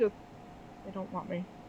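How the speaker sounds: tiny little voice. Storyteller voicing the small voice a listener hears in their head, small voice. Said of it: "hear a small voice in your head".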